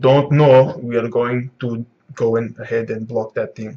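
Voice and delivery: put-on Russian accent throughout. Acting out Zoro's line while describing a scene, in a put-on Russian accent. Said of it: "I don't know why I put on like a Russian accent".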